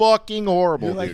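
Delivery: said with Italian flavour, Italian-sounding accent with flair. Saying the pasta in Italy was horrible, Italian-sounding accent. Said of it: "You said that very Italian".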